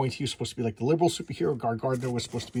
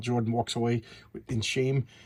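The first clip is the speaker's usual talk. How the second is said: ordinary delivery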